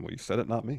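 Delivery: quiet, half-to-himself mutter under the breath. Retelling a wrestler's reply to a taunt: imitating muttering under breath. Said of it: "kind of under his breath".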